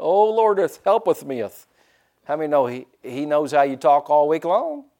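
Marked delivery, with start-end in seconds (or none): 0.0-1.7 put-on pious whining voice, fake archaic. Speaker mocking how people change their voice when talking to god: mock pious prayer voice. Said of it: "we change our voice when we talk to God".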